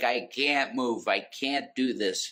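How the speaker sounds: mock crying voice. Retelling what a woman said when told to move more, imitating someone crying. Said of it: "And just like crying".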